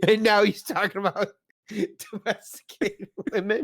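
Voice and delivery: high, slow, laughing through the words.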